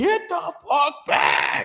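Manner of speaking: mock stretched-out shout, very high and slow. Retelling how everybody reacted around a crash: imitating people yelling. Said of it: "everybody's yelling".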